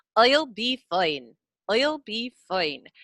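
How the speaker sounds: slow Irish accent, jaw still, tongue-only vowels, I'll as oil. Showing learners how "eye" becomes "oi": generalized Irish accent. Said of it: "Eye becomes oi, but your lips and jaw don't move".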